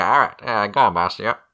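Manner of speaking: tinny over-the-radio comlink voice. Answering the boss over the comlink, in a comlink radio voice. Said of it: "I'm not using my comlink voice".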